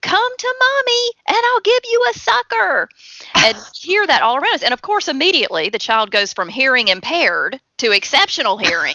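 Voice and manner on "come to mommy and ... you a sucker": put-on very high, desperate shout. Retelling a mom in Walmart calling her runaway son, imitating a mom yelling. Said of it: "this mom yells out".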